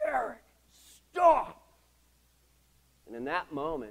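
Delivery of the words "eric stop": very high-pitched, very loud yell. Retelling how a mild, meek man yelled at the speaker, retelling a yell. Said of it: "Mild, meek, yelled at me".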